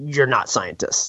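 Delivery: deadpan under-breath mutter. Recounting a film scene, the speaker repeats a scientist's under-breath line: retelling a deadpan mutter. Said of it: "And he goes under his breath".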